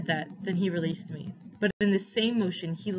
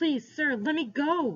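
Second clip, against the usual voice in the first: desperate, high, drawn-out, begging, pleading scream; 7 semitones higher than usual. A boy begs a man gripping him hard to let go, screamed. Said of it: "I screamed".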